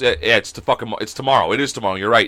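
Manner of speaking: normal talking voice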